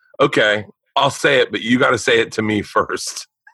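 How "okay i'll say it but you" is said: usual speaking voice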